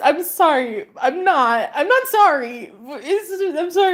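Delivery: high voice broken by helpless laughter. Speaker tries to start telling a story, laughing while talking. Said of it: "I'm laughing so fucking much".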